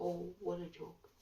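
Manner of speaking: soft, whispered scoff. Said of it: "scoffs at that and says".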